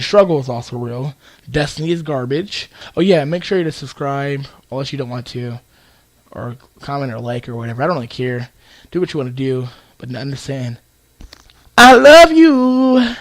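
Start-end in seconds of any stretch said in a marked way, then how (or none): 11.8-13.1 voice cracking, much higher. Closing the video with a message to viewers, voice cracking. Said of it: "My voice is fucking up".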